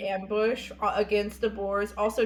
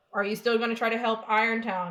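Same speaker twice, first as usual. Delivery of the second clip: plain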